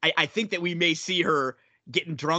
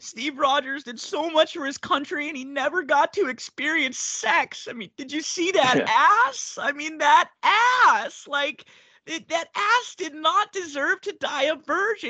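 play-acted drunk, tearful sobbing, very high pitch; 12 semitones higher than usual. Recapping a mid-credit scene, imitating Jen drunkenly crying. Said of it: "she's like drunkenly crying".

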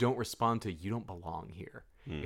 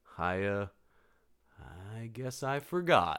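put-on meek voice; 3 dB quieter than usual. Retelling how he excuses himself at the door: imitating a meek excuse. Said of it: "meekly doing a".

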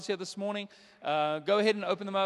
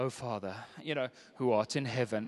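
mock-holy put-on prayer voice, much lower; 8 semitones lower than usual. Mocking how some people switch voices when they start praying, mock-holy deep prayer voice. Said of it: "your voice needs to sound more holy, which normally involves adding bass".

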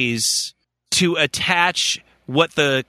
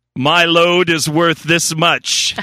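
smug, haughty, arrogant fish voice; 4 dB louder than usual. Joking about expensive caviar, voicing an arrogant fish. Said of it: "That's an arrogant fucking fish".

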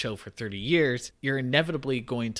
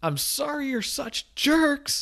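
put-on shrill, high, slow, drawn-out shout; 3 dB louder than usual. Telling a story where a fleeing man calls back to mafia members; retelling a shouted line. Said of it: "him shout back".

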